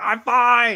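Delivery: very high, loud hollered cry. Retelling how a man fell on a hill and got up, imitating him yelling. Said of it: "just yelling".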